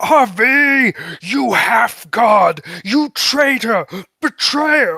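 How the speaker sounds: high, loud, furious scream, drawn out. Voicing a lord who has just been betrayed: screaming in character. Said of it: "And Lord Victoro screams".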